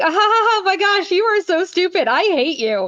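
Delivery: very high, happy-sounding, cheery, laughing. Imitating people who insult someone cheerfully: mock happy laughing insult. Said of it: "they said it in such a happy manner".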